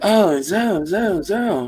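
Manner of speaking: mock high-pitched saucy voice. Imitating how the man in the video talks: imitating a high-pitched saucy voice. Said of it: "the high-pitchedness in his voice".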